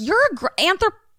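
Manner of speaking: high, exasperated scolding tone. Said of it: "And I'm like".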